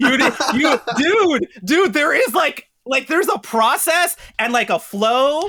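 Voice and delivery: laughing exasperation, high and loud.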